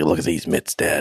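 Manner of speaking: very deep, low-slung voice, pitched far down. Joking that a character talks like Mickey Rourke: Mickey Rourke voice. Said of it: "He talks like Mickey Rourke".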